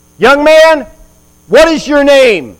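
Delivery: acted, very loud, high-pitched furious angry shout. Retelling how a man woke a young sentry asleep on duty, retold angry tone. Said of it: "in very angry tone and says".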